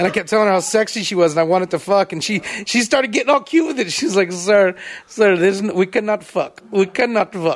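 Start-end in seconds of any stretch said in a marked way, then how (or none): 4.3-7.6 slow, unhurried put-on Indian accent. Retelling a phone scammer's replies, imitating an Indian accent. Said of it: "of Indian accents".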